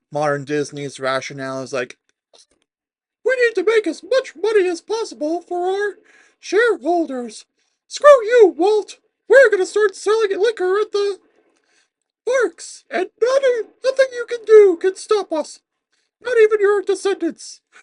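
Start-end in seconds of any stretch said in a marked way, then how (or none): 3.2-17.5 very high-pitched, loud voice. Acting out modern Disney's rationale to the shareholders, in a Mickey Mouse impression. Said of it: "I had to do the Mickey Mouse impression".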